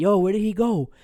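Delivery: high, loud, urgent calling out.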